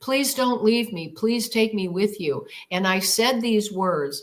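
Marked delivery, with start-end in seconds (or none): 0.0-2.5 mock crying, tearful, begging tone. Retelling pleading with a departing craft: retelling a tearful plea, begging. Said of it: "I stood there crying and begging again".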